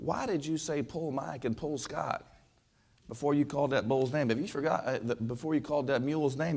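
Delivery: ordinary delivery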